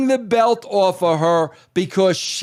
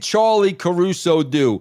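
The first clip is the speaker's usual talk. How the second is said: plain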